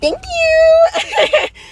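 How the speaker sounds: overjoyed squeal, high and loud.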